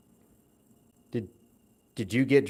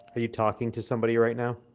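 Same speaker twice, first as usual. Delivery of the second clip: plain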